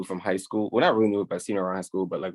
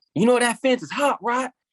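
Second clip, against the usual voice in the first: high, angry mock old farmer voice. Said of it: "He was like".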